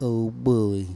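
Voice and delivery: cartoon voice spoken with lips pushed out. Showing how to pull the lips out for a Droopy voice. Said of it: "you just gotta pull your lips out like this".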